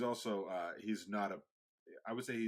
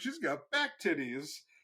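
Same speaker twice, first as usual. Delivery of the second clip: loud, high-pitched, carrying, unfiltered blurted exclamation; 7 semitones higher, 6 dB louder than usual. Retelling what a man said, imitating someone very loud. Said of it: "he just was like so loud".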